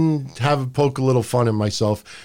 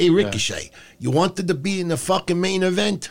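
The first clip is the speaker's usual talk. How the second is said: put-on Italian gangster voice, pitched higher; 5 semitones higher than usual. Picturing Vince as a gangster ordering Ricochet around: Vince as Italian gangster. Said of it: "like an Italian gangster".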